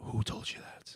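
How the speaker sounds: hushed whisper. A player's character pushes someone into a corner, away from everyone, and whispers. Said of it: "I'm gonna kind of like just like whisper".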